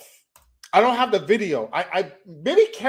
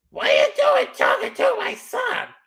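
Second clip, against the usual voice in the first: very high-pitched voice. Retelling what a boy's mother said when she came by: imitating a Karen mother. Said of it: "that's what she sounds like".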